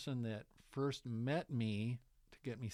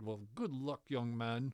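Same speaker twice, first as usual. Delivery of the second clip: imitated Irish accent. Retelling a faculty member's words of good luck: irish accent. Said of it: "and in his accent".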